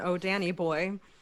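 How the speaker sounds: flat, clipped delivery. Describing how a line in the script is delivered, then showing it: deadpan staccato. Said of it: "the staccato, like totally deadpan".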